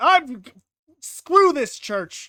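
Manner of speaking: put-on slow, loud bellow in an Italian accent. Imagining the Sistine Chapel artist getting fed up, yelling as Michelangelo. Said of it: "My Michelangelo's Italian accent".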